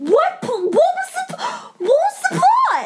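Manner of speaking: yelling in disbelief. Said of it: "Okay, don't yell".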